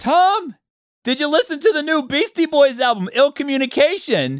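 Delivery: put-on, very high, eager, buzzing, excited voice. Reenacting their younger self asking a friend about an album, retelling an excited question. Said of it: "excitedly said".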